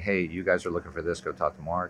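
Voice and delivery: ordinary talk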